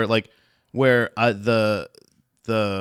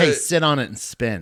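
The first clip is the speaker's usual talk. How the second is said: ordinary delivery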